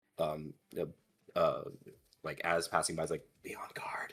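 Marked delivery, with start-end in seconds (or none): 3.5-4.2 soft, breathy whisper. Passing another player in the scene and warning her: whispering. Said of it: "I'm going to whisper to her".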